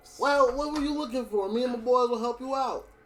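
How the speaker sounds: folksy, rustic country farmer dialect voice. A farmer walks up to the players and speaks, in a farmer character voice. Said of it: "One of the farmers come over to you and be like, / You ain't dead, is you? / One of the farmers come over to you and be like".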